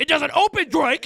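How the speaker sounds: very high, very loud, shrill, frantic freak-out. Retelling a Drake and Josh tree house scene: imitating Josh freaking out. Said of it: "freaks out on him".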